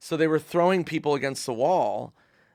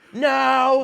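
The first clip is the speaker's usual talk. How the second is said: put-on very high, shrill indignant crowd protest, no drawn out; 11 semitones higher, 7 dB louder than usual. Retelling a crowd's reaction after being told it's wrong: imitating a mad crowd. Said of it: "And then they're mad".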